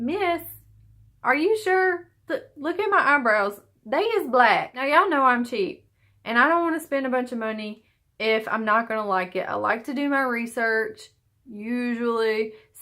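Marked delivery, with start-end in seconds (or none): 0.0-4.7 put-on, pitched-up, protesting, objecting voice. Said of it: "and I'm like".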